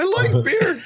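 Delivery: voice cracking at a very high pitch. Repeating a famous line about beer: Brett Kavanaugh voice cracking. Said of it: "when his voice kinda cracks, he sounds kinda like a Muppet".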